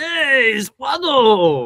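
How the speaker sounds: very high, loud, swooping alien voice. Figure collector naming toys does a quick impression: Watto impression. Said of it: "that wasn't a bad impression".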